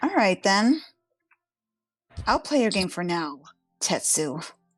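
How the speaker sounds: veiled, threatening menace in every word. Voicing a character who smiles at the water and speaks: threatening. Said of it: "threateningly into the water".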